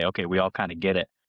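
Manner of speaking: ordinary talk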